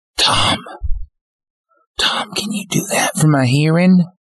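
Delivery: stage whisper, loud enough to carry. Voicing a character who calls out to Tom: loud whisper. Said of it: "kinda whispers, but, like, a loud whisper".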